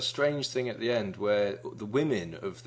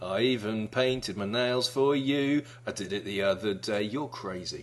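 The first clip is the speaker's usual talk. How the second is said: ordinary talk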